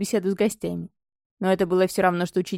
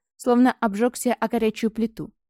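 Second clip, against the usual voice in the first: ordinary delivery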